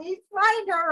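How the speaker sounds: acted-out bawling. Recounting when she went missing, retelling a plea, retelling her own bawling. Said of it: "I'm bawling".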